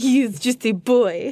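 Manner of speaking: slight, light, put-on French accent. After asking to do the rest of the episode this way, a little french accent. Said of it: "this little French accent".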